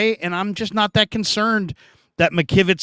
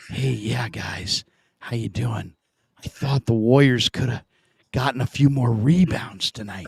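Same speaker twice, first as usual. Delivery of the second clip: hushed half-whisper, kept down; 6 semitones lower, 3 dB quieter than usual. Retelling how a caller talks late at night: imitating a half-whisper. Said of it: "Hutch, why are you whispering?".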